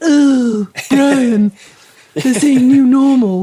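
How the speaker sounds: loud slow cartoon voice. Imagining a cartoon character reacting to a phrase: Stewie from Family Guy voice. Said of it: "You can imagine Stewie from Family Guy going".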